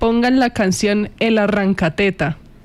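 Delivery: ordinary delivery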